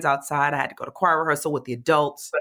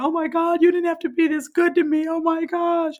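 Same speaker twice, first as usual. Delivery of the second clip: tearful, crying outburst, very high; 13 semitones higher than usual. Retelling crying in the back at an event: retelling own crying words. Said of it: "I was in the back crying".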